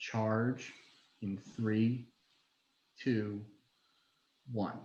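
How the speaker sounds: soft, hushed half-whisper. Tabletop player half-whispering to Mungo just before the charge: half-whispering. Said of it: "I am going to whisper to".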